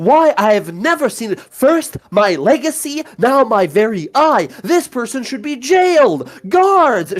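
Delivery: high, indignant, outraged yelling in a woman's voice. Speaker voices a lady who is angry with the listener: mock-outraged yelling woman. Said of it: "She's just yelling".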